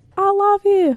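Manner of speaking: very high-pitched put-on Australian accent. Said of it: "You said that in an Australian accent".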